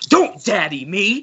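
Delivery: put-on angry voice. Retelling a movie scene where a father confronts his daughter, imitating J.K. Simmons screaming. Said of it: "screaming at his daughter in the hospital".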